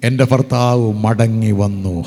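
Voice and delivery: laughing, smiling words. Retelling what a woman said to him at church, retelling a smiling remark. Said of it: "ചിരിച്ചുകൊണ്ട് പറഞ്ഞു".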